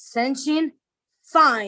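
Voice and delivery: put-on dead-serious, very serious delivery. Retelling how he gives his dog a command with a hand signal, retelling in a very serious voice. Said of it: "in a very serious voice".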